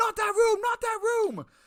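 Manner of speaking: high-pitched, frantic, repeated yelling. Retelling a film scene where a police chief yells: imitating someone yelling. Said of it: "is yelling".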